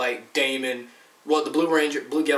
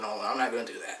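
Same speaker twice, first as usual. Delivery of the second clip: normal talking voice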